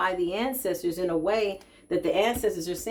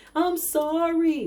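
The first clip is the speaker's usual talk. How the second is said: mock tearful crying, apologetic, higher pitch; 9 semitones higher than usual. Speaker mimics how a group of people cry and apologize in a made-up impression, imitating a tearful crying apology. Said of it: "I hear people crying, wailing".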